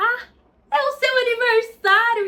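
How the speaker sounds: very high, very loud, drawn-out speech. Retelling a man's line to a girl from a scene, imitating someone talking very loudly. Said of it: "E começa a falar muito alto".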